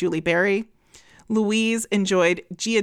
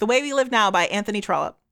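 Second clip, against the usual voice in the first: rattled off as fast as possible. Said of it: "say them as fast as we can".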